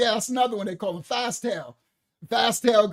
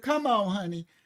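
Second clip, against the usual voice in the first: put-on elderly grandmother voice, calling out; 3 dB quieter than usual.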